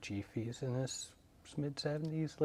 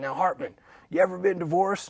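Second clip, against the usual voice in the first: very loud, put-on growly tough-guy voice; 3 semitones higher, 10 dB louder than usual. Retelling what a man said when they first met, imitating a growly voice. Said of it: "his voice was all growly".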